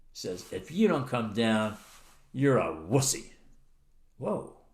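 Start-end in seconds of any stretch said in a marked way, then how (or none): 0.5-3.2 put-on taunting attitude, lower pitch. Retelling a friend's dare to come down: imitating someone saying it with attitude. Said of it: "looks up with an attitude".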